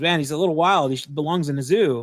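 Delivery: ordinary delivery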